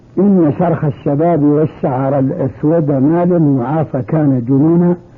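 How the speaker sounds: ordinary delivery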